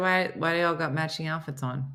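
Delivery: ordinary delivery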